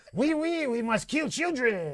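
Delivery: clumsy, bad put-on French accent. Pitching a joke story idea about Ellie, in a bad French accent. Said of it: "I had to do it with a French accent".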